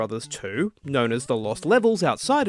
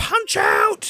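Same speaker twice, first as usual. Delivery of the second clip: very high-pitched, loud shout; 4 dB louder than usual. Announcing a game title with two exclamation marks, shouted title. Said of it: "I had to shout that because it has two exclamation marks".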